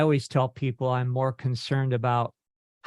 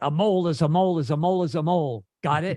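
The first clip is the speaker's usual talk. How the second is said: mock fed-up, clearly annoyed, very irritated tone; 4 semitones higher than usual. Recalling how he turned and answered their question, mimicking his mock-triggered voice. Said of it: "in a very triggered voice just said".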